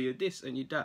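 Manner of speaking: ordinary talk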